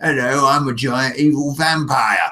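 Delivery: put-on Cockney accent, evil vampire voice. Showing how to use one voice for every character, as a giant evil vampire: Cockney accent. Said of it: "this Cockney accent".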